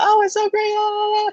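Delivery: very high, put-on, overly happy, cheery gushing voice. Speaker mimics recruiters who have contacted them, mock overly happy recruiter voice. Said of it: "that type of voice pitch".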